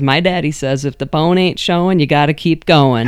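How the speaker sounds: plain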